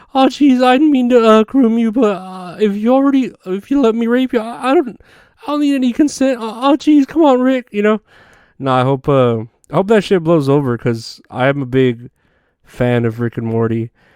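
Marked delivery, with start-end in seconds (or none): 0.1-7.7 very high, halting, stumbling voice. Imagining the creator's messages read aloud in Morty voice. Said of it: "his Morty voice".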